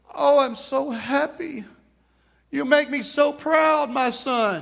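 high, slow, put-on joyful sobbing. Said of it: "It's tears of joy".

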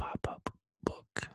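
creepy, breathy whisper right into the mic. Repeating a fun phrase for the listeners, said close to the mic. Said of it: "let me say it close".

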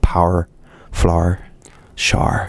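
put-on Northern Irish accent with Northern Irish vowels. Explaining how a spouse from northern ireland taught the practice words: northern irish accent. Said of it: "Can you do a Northern Irish accent?".

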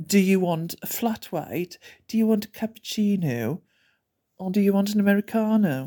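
mock patronising tone, really condescending and talking down. Retelling how the guy behind the counter listed coffee types: imitating a condescending tone. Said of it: "in a really condescending manner".

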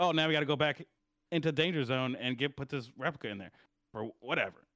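ordinary talk

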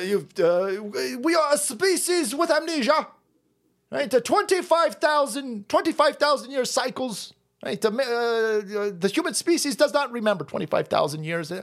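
put-on clumsy English accent with long, stretched uhs. Quoting an author's idea about human memory: Graham Hancock impression. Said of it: "I can't do an English accent".

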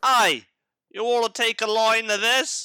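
shrill, high, loud calling out. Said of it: "he'd be like".

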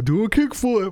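loud yell. Retelling someone yelling from a car window: imitating someone yelling. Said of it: "some butthole yelling out the window".

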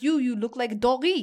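put-on French accent. Retelling what a man said to the speaker, in a put-on French accent. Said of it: "I'm going to say this in my French accent".

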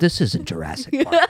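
put-on high, childish little kid voice. Retelling the kids' reply when Dad offers a movie: imitating kiddie voices. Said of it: "in our kiddie voices".

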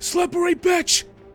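very high, loud shout in a bandit voice. Voicing a bandit who shouts at a fleeing target: bandit voice. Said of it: "you do hear this bandit go".

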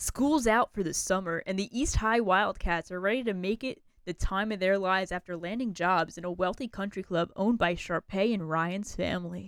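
put-on kids-TV promo announcer voice. Speaker reads an IMDb movie synopsis aloud in a Disney Channel voice. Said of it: "That was my Disney Channel voice".

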